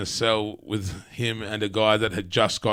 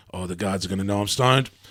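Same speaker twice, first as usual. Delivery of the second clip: put-on stoned, freaked-out, rushed paranoid panic. Retelling walking round the prison yard while freaking out: imitating own paranoid panic. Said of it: "proper paranoia".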